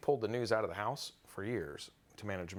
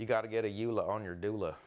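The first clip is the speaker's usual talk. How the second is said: put-on Southern accent with drawl. Joking in rhyme about the eula: put-on Southern accent. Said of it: "he's going straight to this Southern accent today".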